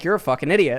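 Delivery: acted, utterly uninflected, dead-level deadpan monotone. Describing a streamer answering a dumb chat comment, imitating her flat monotone. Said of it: "says it in the most fucking monotone".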